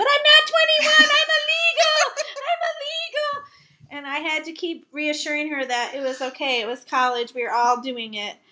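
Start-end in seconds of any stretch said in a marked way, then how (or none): 0.0-3.5 put-on very high, shrill drunken shriek. Recalling coming home from a college outing, the speaker imitates Carlene's drunk screaming. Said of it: "she started screaming".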